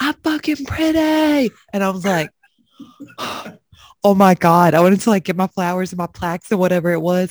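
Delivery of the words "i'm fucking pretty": mock very high, all-out, shrill shouting. Telling how he kept yelling while you wanted to exit the stage, imitating someone yelling so loud. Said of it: "He's just yelling like so loud".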